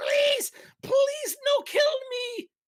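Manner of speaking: very high, squeaky kobold voice, grovelling. Voicing a groveling kobold begging the party: begging kobold voice. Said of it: "grovels to the ground, and begs".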